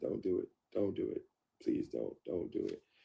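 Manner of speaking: put-on, repeated, pleading begging voice. Retelling pleading with the officers on camera: retelling pleading. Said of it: "see of me pleading with them".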